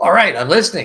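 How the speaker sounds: very loud, high, almost screaming. Retelling calling out to the sky on the porch: imitating almost screaming. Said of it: "it's almost screaming".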